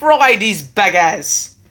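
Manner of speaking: put-on Australian accent throughout. Asked by her to say funny words, speaker repeats one as an Australian accent impression. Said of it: "Like in the Australian impression".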